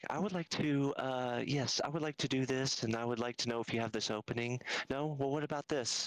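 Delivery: creepy, mild, gentle and mannerly tone. Describing a man who won't take no for an answer, imitating his soft voice. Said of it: "but very kind of soft".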